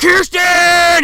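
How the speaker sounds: very high, shrill, loud screaming call. Retelling a movie scene, the boyfriend calls for her: imitating a scream. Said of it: "He's, like, screaming".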